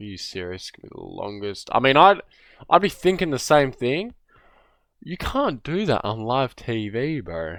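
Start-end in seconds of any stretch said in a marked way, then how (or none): 0.0-1.7 play-acted hushed, crestfallen, let-down whispered mutter. Voicing what a drafted player seems to say: imitating a disappointed player. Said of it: "Bro looked disappointed".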